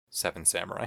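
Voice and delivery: imitated hushed voice. Retelling how the film's characters say the group's name: imitating hushed tones. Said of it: "as they say in, like, hushed tones".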